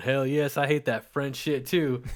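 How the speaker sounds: put-on chuckling Midwestern man's voice. Podcaster imagines Midwestern listeners' reaction, imitating chuckling Midwesterners. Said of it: "Midwest hairy bellies drinking Bud Light and the recliners chuckling, going".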